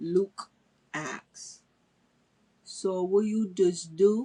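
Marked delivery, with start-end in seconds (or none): 2.6-4.3 Bajan (Barbadian) accent. Telling a story, speaker retells a man chatting to someone waiting for work: imitating Luke's heavy Bajan accent. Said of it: "in that beautiful, heavy Bajan accent".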